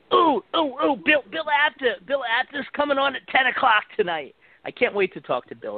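very high, squeaky, badly done put-on voice. Announcing that a guest comes on tonight: terrible Bill Apter impression. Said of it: "that was a terrible Bill Apter impression".

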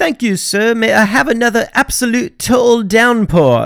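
terrible put-on British accent, high and slow. Narrating british history, the speaker voices the brits in a terrible british accent. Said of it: "that is a terrible accent".

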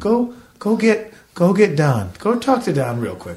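strained attempt at calm. Retelling telling someone to fetch the building manager during a leak: retelling forced calm. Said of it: "I'm trying to be so calm".

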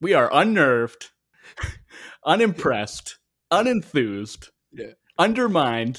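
loud, high-pitched, proclaiming delivery. Imagining agents leaking a story to a reporter: Stephen A Smith voice. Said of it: "the Stephen A Smith voice saying".

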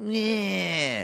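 high, mocking, distasteful yeah. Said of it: "laughing at their distaste for her".

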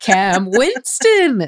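high-pitched game-show announcer voice. Being Frasier sounding like an announcer saying a name: Frasier voice. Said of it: "That was me being Frasier when he sounds like Don Pardo when he says Cam Winston".

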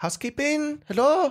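high put-on Spanish accent. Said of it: "I could hear her accent".

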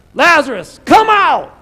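very loud, very high, booming, high-pitched shout. Retelling how he called Lazarus out of the tomb, shouted loudly. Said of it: "That's a shout, by the way".

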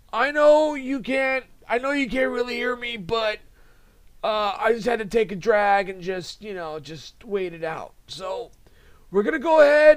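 raspy smoker's voice impression. Mocking a wrestling executive who sounds like a heavy smoker: John Laurinaitis impression. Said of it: "He sounds like he went through about three packs before the show".

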